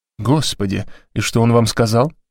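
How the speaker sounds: ordinary delivery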